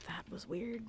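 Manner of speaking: soft, private mutter under the breath. Voicing a character reacting after another walks away: muttered under breath. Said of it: "under her breath goes".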